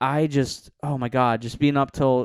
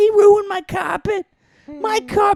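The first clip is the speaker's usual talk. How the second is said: very high, slow, drawn-out whiny sobbing wail; 5 dB louder than usual. Retelling his mom's reaction to her ruined carpet, imitating his crying mom. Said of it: "Why is every woman I do that voice?".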